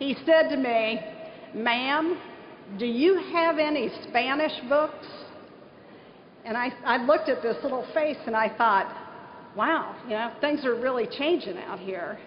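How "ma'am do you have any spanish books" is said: put-on heavy, laid-on southern Ohio accent. Speaker retells a kid running through the door asking a question, in a thick southern Ohio accent. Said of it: "he says in his thickest southern Ohio accent".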